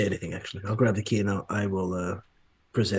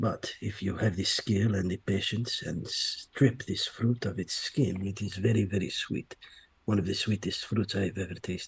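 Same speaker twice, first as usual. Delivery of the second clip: softly spoken, hushed, private-sounding voice. A player's character hangs back and speaks privately to a companion, low hushed voice. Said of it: "in a low voice, in a hushed voice".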